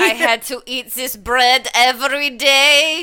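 put-on improper Ukrainian accent. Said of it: "I don't think that's a proper Ukrainian accent".

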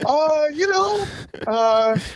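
very high-pitched, slow, drawn-out hesitant filler. Answering teasing about why not married yet: voice going high. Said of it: "look how high your voice just got".

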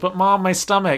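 put-on high, sweet, cutesy baby talk voice. Recapping a scene, imitating Gabriella talking to her mom: Gabriella's cutesy baby voice. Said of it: "like, baby voice".

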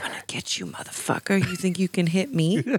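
fast, sinister, menacing whisper. Speaking in character to a creature, as another player suggested: whispering menacingly. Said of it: "You're just whispering at it".

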